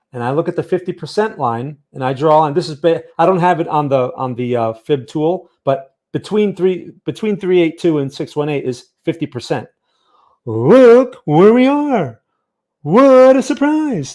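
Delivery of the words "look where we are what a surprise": very high, loud, slow, drawn-out sitcom comic delivery. Pointing out where the price sits on a chart: Seinfeld impression. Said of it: "That's my Seinfeld impression".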